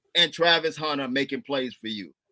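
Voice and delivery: ordinary talk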